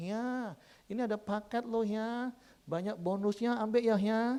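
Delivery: put-on tender gentle tone. Quoting his wife offering a package with bonuses, imitating a soft gentle tone. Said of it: "minimal lembut seperti itu".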